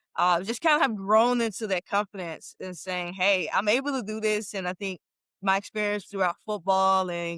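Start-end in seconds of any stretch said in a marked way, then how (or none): none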